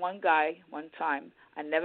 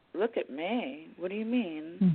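calm delivery, quieter and slower; 4 dB quieter than usual. Retelling your reply to a guy who remarked on your foot brace, retelling own calm reply. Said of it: "I just said it calmly to him".

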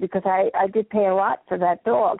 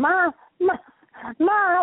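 mock screaming, very high-pitched, like a dog; 9 semitones higher than usual. Recalling Louis screaming at the speaker on her return, imitating Louis screaming Ma. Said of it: "start screaming".

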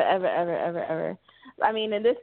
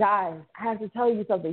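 put-on whispering; 3 semitones higher than usual. Retelling a horror sketch where a character warns the group: imitating someone whispering. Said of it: "He's whispering, obviously".

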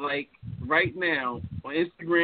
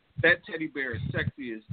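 ordinary talk, nothing marked

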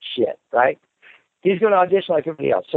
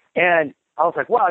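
ordinary talk

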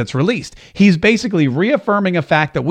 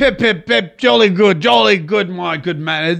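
put-on, slow, upper-class English accent. Mocking how British politicians talk, the speaker puts on a mock posh British accent. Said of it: "that's how they all sound and that's how they all talk".

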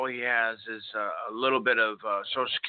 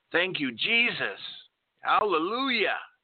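mock all-out shout, booming, high-pitched, loud as possible; 7 semitones higher than usual. Pulling away in a car, the speaker retells what a delighted man said, retelling a very loud shout. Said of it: "in the loudest voice".

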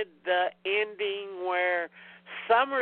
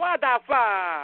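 put-on, over-the-top mumbling pronunciation; 3 dB louder than usual. Quoting a line from Usual Suspects: imitating Del Toro's over-the-top pronunciation. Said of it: "Del Toro steals it with his over-the-top pronunciation".

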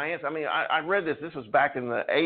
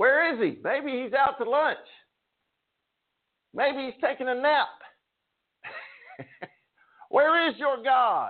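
put-on very high-pitched, laughing, mocking jeer; 10 semitones higher than usual. Retelling the story, acting out Elijah mocking the people calling on their god. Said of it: "He mocks them".

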